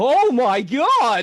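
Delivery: very high, loud blurted exclamation. Answering whether they have a Nick Shabazz impression: Nick Shabazz impression. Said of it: "do you have a Nick Shabazz impression?".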